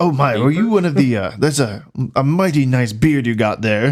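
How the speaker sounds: patronizing, condescending, talking-down tone. Retelling what a man said about someone's beard: mock-condescending. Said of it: "He says, kind of like condescendingly".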